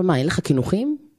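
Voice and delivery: plain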